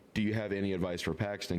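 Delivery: ordinary delivery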